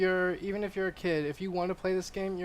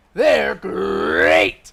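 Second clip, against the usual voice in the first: sultry, very low, very loud, rough, raspy growl; 14 semitones lower, 14 dB louder than usual. Asked to repeat an impression, sexy Tony the Tiger voice. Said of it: "That's my impression of the sexy Tony the Tiger".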